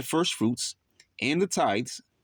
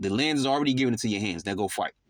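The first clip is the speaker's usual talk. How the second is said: plain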